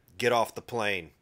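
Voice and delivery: mock cool, unbothered, calm and even. Retelling a flight attendant ordering a passenger off: imitating a calm flight attendant. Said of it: "the flight attendant very calmly said".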